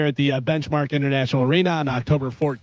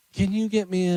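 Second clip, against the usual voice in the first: put-on, higher-pitched, coaxing, wheedling voice; 5 semitones higher than usual. Retelling how a wife asks for something: imitating wife's wheedling request voice. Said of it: "You don't have to do the voice".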